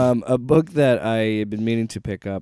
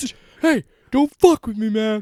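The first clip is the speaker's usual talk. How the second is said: very high, loud, territorial barking dog voice; 11 semitones higher, 5 dB louder than usual. Joking with a co-host about why dogs bark, voicing a barking dog. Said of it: "really to me being like".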